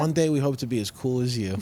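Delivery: ordinary delivery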